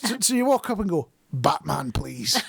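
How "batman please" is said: rough, gravelly voice. Ordering at a till, saying the name in a gruff Batman voice. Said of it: "you have to do it in that voice because Batman's all gruff".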